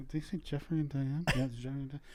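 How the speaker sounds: soft muttering under the breath. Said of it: "all the people behind us muttering".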